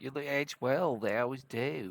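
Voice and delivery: very slow, drawn-out put-on Australian accent. Quoting a line from a clip, imitating an Australian accent. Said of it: "That was Australian".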